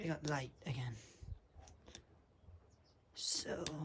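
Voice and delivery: very soft voice giving out.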